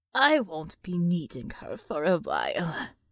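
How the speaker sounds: low, rasping, demonic devil voice. The devil speaks while turning back to the door, raspy devil voice. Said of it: "the devil rasped".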